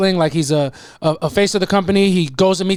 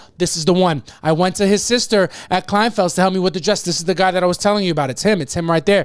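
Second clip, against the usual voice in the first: ordinary delivery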